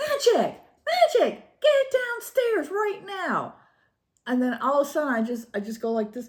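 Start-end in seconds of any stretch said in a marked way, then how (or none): 0.0-3.5 put-on very high, swooping, drawn-out yell. Retelling calling the dog downstairs, retelling yelling for the dog. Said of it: "And I'm yelling again".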